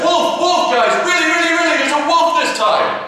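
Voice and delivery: frantic, panicked, very high shouting. Telling a fable, voicing the boy who sees a real wolf: panicked shout. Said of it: "Panicked, he shouts".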